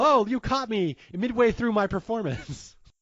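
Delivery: put-on casual tone. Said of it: "very casual".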